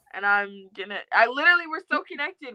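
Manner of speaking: ordinary talk, nothing marked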